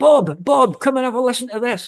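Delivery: very high, carrying shout. Speaker retelling how their mum called their dad Bob, retelling a shout. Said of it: "And my mum shouts to my dad".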